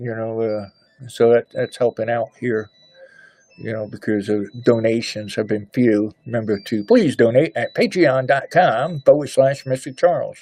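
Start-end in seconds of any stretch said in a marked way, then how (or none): 6.3-10.4 radio commercial announcer voice. Speaker asks listeners to donate, in a commercial announcer voice. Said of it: "Does that sound like a commercial?".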